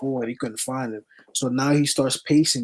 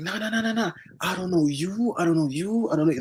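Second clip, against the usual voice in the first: high, heated, worked-up, insistent delivery; 6 semitones higher, 3 dB quieter than usual. Retelling a stranger in a store confronting the group: imitating someone getting loud. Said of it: "this dude starts getting loud".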